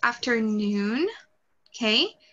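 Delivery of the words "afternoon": afternoon, stress on the syllable noon. English tip for Portuguese speakers, saying afternoon with stress on noon. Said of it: "The emphasis is on the noon".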